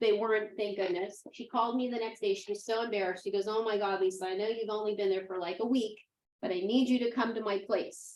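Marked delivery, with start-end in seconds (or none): none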